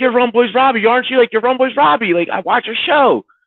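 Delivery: high yelling, all together. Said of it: "they're all yelling".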